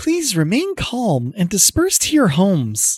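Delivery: put-on extremely cutesy, girly, high, swooping voice. Narrator voicing an address to a crowd, in an extraordinarily cutesy feminine voice. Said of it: "extraordinarily cutesy feminine voice going".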